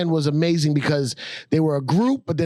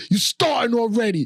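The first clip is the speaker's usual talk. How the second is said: put-on girl's voice yelling, higher pitch; 6 semitones higher than usual. Retelling a meme video of a girl in the projects: imitating a girl yelling. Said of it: "she's yelling at the guy".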